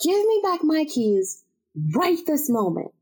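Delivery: furious, pissed-off, demanding tone. Retelling shouting to get lost keys returned: retelling furious demand. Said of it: "I was pissed".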